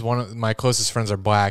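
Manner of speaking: plain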